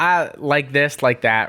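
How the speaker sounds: put-on terrible Valley Girl accent, drawn out. Showing what overusing like sounds like: terrible Valley Girl accent. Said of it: "it's a terrible Valley Girl accent".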